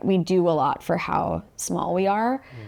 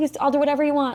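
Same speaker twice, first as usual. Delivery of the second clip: put-on desperate pleading tone, higher pitch; 8 semitones higher than usual. Retelling own pleas after opening the business: imitating desperate pleading. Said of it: "this air of desperation almost where you're like".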